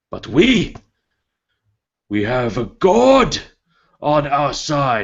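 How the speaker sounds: rallying battle-cry shout. Voicing a tiefling leader rallying soldiers before battle: screaming war speech. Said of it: "and he screams".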